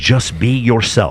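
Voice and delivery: put-on speaking with a Welsh accent. Quoting a clip of Chris Williamson: Chris Williamson Welsh accent. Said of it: "He says it with his Welsh accent".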